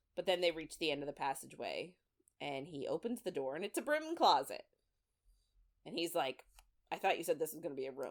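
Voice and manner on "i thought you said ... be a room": put-on annoyed, irritated voice. Retelling a book scene where a door opens on a broom closet: imitating an annoyed character.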